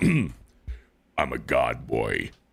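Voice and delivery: deep, very slow, solemn voice, every word dragged. Answering a viewer's request for an impression: Kratos impression. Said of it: "Give an impression, please".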